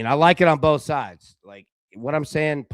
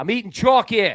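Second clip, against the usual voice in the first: terrible fake New Jersey accent, pitched up; 8 semitones higher, 4 dB louder than usual. Making a first-touchdown pick, the speaker repeats it in a bad new jersey accent. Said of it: "That was terrible".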